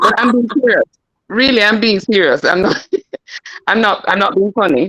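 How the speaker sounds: earnest, insistent tone, holding back laughter. Insisting a question is serious while others send laughing things: stifling laughter. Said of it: "I'm trying not to laugh".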